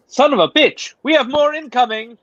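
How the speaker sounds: announcer voice like vintage British wireless radio. Game narrator voicing Junker, Junker in 1920s British announcer voice. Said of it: "Very British nineteen twenties uh, radio announcer voice".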